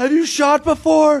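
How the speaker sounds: high, loud screaming. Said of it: "screaming at him".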